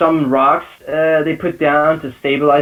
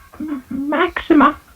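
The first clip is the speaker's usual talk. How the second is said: shaky, trembling whisper, higher pitch; 12 semitones higher than usual. Voicing a frightened character naming the snake lady: trembling whisper. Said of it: "and he whispers".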